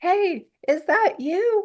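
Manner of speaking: put-on high, slow old-man yelling out. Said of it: "some old guy yells out".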